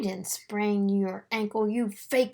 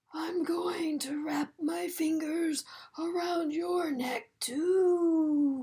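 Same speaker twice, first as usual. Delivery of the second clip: high, eerie ghost wail, stretched too long; 6 semitones higher than usual. Reading a story: a girl pretending to be a ghost tries to scare someone, spooky howling ghost voice. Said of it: "she howled in her spooky voice".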